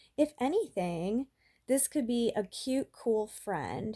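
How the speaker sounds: plain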